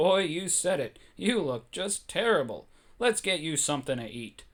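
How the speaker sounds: plain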